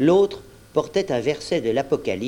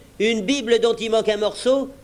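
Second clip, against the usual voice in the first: higher, derisive, jeering mocking scoff; 9 semitones higher than usual. Narrator reads a man answering a worried companion, in a mocking tone. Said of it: "d'un ton railleur".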